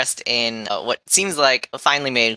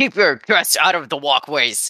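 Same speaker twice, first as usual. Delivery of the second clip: spluttering, sputtering voice full of anger; 4 semitones higher than usual. In a game, voicing a character who just slipped and fell, sputtering angrily. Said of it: "sputtering angrily".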